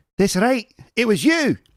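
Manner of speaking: bad put-on Scottish accent. Acting out a plant named Fern accusing someone: awful Scottish accent. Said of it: "apologies for the awful Scottish accent".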